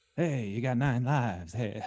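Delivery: very slow, dragged-out, off-target drawl. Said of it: "that was more [name], sorry".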